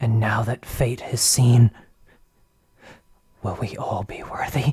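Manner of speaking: muttered, seer-like prophetic voice. Voicing a stranger the party meets, speaking to them, prophetic muttering. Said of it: "you can see that she is an elven woman with a large amber eye on the center of her forehead. / you can see that she is an elven woman with a large amber eye on the center of her forehead. / you can se".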